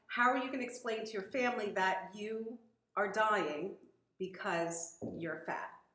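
ordinary delivery

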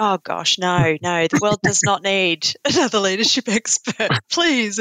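put-on exasperated, eye-rolling, dismissive tone. Retelling a reply to a suggested book topic: retelling own eye-rolling dismissal. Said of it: "And I rolled my eyes".

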